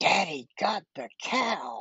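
put-on child's high, loud stage whisper. Retelling what one child said to the other: imitating a child's stage whisper. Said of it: "in kind of a stage whisper says".

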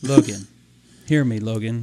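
very deep, slow, dragged-out godlike voice. Retelling how a father called out to Logan: imitating the voice of Jesus. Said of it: "this is the voice of Jesus".

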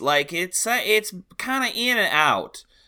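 put-on Southern accent drifting in and out, very high, loud. Podcast co-host showing how an actor sounded in a film, Oscar Isaac's in-and-out Southern accent. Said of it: "He kind of sounds like this".

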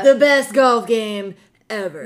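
slow, drawn-out, grand, boastful tone. Bragging about a golf game to another speaker: Trump impression. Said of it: "That was my Trump impression".

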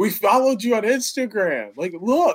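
very high, screaming yell. Retelling how some kids shouted across at the game: imitating someone screaming. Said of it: "they scream at me like".

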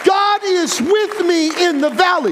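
preaching delivery at full, projected shout.

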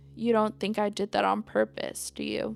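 normal talking voice

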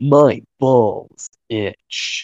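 really bad put-on macho tough-guy voice. Host describing his shower practice before the episode, really bad Duke Nukem voice. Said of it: "practicing my really bad Duke Nukem voice".

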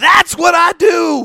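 loud, high, slow yell. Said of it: "and he yells".

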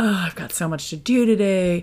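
play-acted, downbeat, negative voice. Describing how the brain wakes up in the morning, retelling negative morning voice. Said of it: "You can just even hear the tone of my voice".

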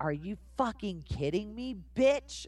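mild shouted outburst, pitch rising. Retelling their trailer line, screamed at the girlfriend: retelling a scream. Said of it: "And it was me screaming".

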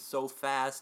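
ordinary delivery

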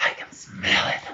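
low, breathy voice. Voicing an unseen thing in the dark near a player: low breathing voice. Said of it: "low breathing that just says".

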